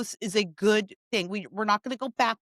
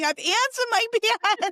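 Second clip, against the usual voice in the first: acted-out desperate scream, much higher; 13 semitones higher, 4 dB louder than usual. Telling a story of running around begging for help, retelling a desperate scream. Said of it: "so I'm running around screaming".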